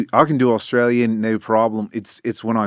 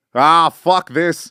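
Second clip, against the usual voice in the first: put-on Australian accent; 6 semitones higher, 4 dB louder than usual. Doing an impression of an Aussie at work: put-on Australian accent. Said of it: "this is my impression of an Aussie at work".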